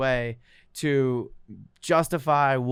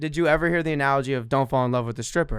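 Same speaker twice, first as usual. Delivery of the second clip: plain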